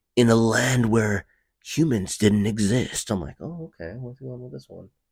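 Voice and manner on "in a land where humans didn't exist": raised, dramatic movie-trailer announcer voice. Doing an impression of a narrator setting up a film's premise, while telling a friend about a conversation, in a put-on movie trailer voice. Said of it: "The movie trailer voice?".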